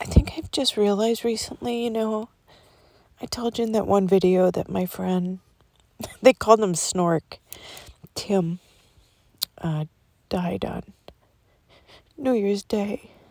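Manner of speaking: voice catching, choked-up, close to tears. Talking to viewers about a friend who died, voice choking up. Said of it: "I don't know why I'm going to cry".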